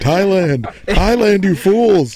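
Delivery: play-acted, shrill, very high-pitched screamed cry. Imagining a man driving down the 405, imitating a man screaming.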